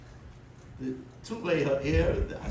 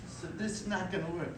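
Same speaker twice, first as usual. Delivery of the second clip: ordinary delivery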